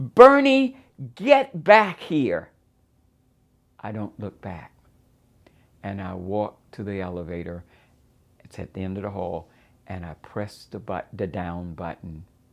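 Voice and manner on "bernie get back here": very high, loud yell at full volume. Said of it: "she yells".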